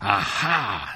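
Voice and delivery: exclaiming with contempt, scornful. The sorceress meets the prince who climbed up for Rapunzel, exclaiming with contempt. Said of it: "she exclaimed with contempt".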